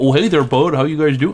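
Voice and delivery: put-on over-the-top Minnesota accent. Speaker describing how someone does not talk, exaggerated minnesota accent. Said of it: "exaggerated version of the Minnesota accent".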